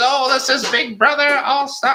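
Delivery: very high robot host voice. Retelling a zing from the show in a Zing Bot voice. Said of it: "That's my Zing Bot voice".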